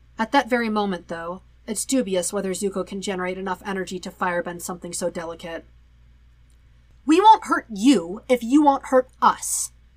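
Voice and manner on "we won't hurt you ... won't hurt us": haughty, menacing, loud and slow. The waterbender addresses a weakened firebender, haughty and threatening. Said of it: "the waterbender says in a haughty voice".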